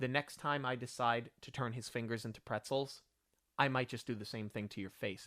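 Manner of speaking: very calm, steady, even delivery. Retelling a film scene where a man threatens a woman; retelling a calm line. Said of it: "he says it very calmly and he goes".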